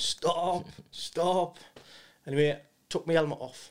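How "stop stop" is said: loud shout. Recounting his injury, the speaker quotes a fellow soldier: retelling a shout. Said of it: "He's shouting".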